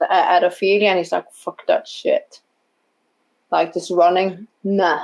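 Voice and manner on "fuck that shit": growled, snarling outburst. Voicing a character who jumps out and runs around: snarling. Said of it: "He's snarling".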